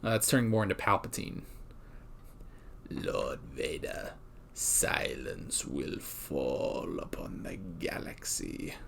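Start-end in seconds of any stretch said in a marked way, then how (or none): 2.9-8.7 very slow whisper in a villain's manner. Showing off your best Palpatine, address Lord Vader in a Palpatine impression. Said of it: "That's my best Palpatine impression".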